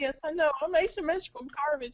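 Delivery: loud, high, tearful, blubbering crying wail. Retelling an anime scene where the character breaks down: imitating Death the Kid crying. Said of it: "and he starts crying about it".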